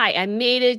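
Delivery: ordinary talk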